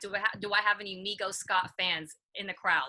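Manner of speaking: ordinary delivery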